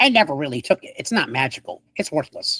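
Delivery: tiny, small, diminutive little voice. Game master voices a little voice the player hears, little voice. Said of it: "you hear a little voice says".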